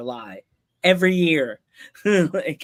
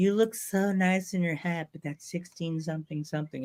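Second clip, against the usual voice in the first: put-on sweet-sounding North Carolina beach girl voice; 2 semitones higher, 7 dB quieter than usual. Retelling what a North Carolina girl said about a hat: imitating a beach girl voice. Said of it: "she sounded like a beach girl".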